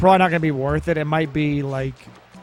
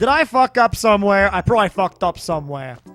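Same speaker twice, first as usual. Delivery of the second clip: put-on Brooklyn-accented voice; 4 semitones higher than usual. Voicing your own first thought after a possible joke, in a Brooklyn accent. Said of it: "I think to myself in like a in like a Brooklyn accent".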